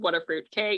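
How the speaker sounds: ordinary delivery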